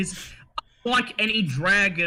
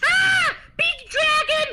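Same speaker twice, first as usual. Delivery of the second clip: extremely shrill shriek, much higher, slower; 4 dB louder than usual. Narrating a creature that opens its eyes and shrieks, in an extremely shrill shriek. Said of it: "in an extremely shrill voice shrieks".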